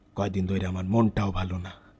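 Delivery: low, flat, soft, sad mournful lament.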